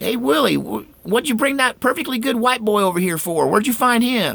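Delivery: shrill, very high, hollered yell. Retelling how another neighbor called out: imitating someone yelling. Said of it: "Another one yelled".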